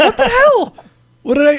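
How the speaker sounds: very high, loud, strained put-on voice. Protesting about having ranted only once: high-pitched voice. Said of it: "I'm using high voice".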